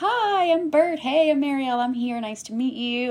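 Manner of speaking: bright, cheerful tone. Retelling a first meeting with an oncologist like a blind date: imitating a chipper greeting.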